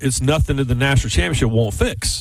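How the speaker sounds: plain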